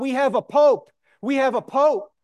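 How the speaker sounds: high-pitched crowd shout. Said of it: "the people would shout".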